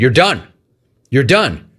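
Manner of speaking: ordinary delivery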